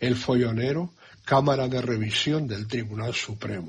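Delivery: ordinary talk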